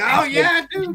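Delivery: very high, excited, thrilled burst. Retelling how Mister Collector got excited: imitating Mister Collector excited. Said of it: "he got excited and was like".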